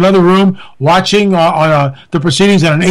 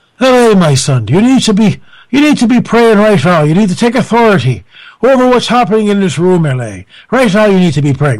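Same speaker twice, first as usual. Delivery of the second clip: put-on Irish brogue accent. Being silly, speaker voices the Holy Spirit speaking to him: Irish-brogue Holy Spirit voice. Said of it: "Where did the Irish brogue for the Holy Spirit come in?".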